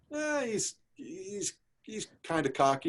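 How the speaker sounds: high, hesitant, grudging delivery.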